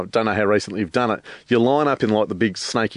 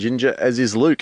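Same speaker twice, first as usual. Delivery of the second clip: ordinary talk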